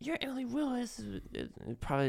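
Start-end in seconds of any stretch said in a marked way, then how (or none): 0.0-1.0 high, mock starstruck fan gush. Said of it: "they're just like".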